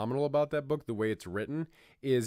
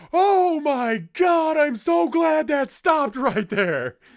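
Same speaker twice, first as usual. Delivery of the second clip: booming big voice, very loud and very high; 11 dB louder than usual. Recall how your teacher, a big guy, reacted, in Dirk Palmer's big, big voice. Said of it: "a big big voice to go with it".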